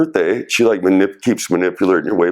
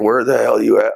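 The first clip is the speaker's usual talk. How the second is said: play-acted screaming tone, kept small and mild; 3 semitones higher than usual. Retelling a phone call where she screamed at him: imitating someone screaming. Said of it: "she just starts screaming at me".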